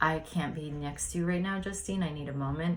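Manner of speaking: normal talking voice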